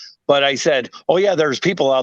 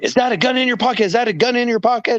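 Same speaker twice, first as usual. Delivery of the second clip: play-acted very high, repeated yell; 11 semitones higher than usual. Retelling a police stop where the cop starts: imitating a cop yelling.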